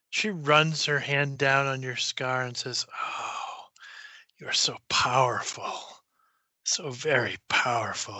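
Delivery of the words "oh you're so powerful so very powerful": purring, quieter and slower voice. Game narrator voicing her as she touches a player's scar, almost purring. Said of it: "it's almost purring".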